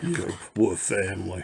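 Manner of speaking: put-on smooth deep voice. Showing viewers a figure, doing a Vin Diesel impression. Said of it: "I didn't do him good at all".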